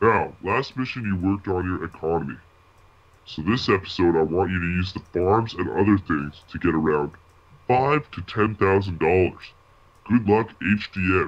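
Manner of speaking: put-on deep voice, pitched low. Prompted to switch to the deep voice, the speaker announces the next mission: deep voice. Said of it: "Go to the deep voice now".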